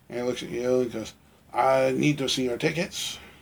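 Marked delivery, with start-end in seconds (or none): 1.5-3.1 put-on French accent. Retelling what a ticket-taker at the ramp says: French accent. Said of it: "he's got that kind of accent".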